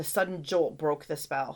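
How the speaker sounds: ordinary delivery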